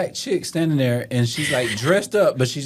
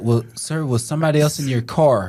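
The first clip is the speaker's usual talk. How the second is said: usual speaking voice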